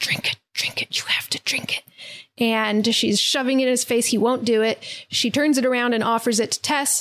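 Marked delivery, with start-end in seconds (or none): 0.0-1.8 muttered under the breath, quieter. Retelling a scene, quoting a character: imitating speaking under her breath. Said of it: "under her breath going like".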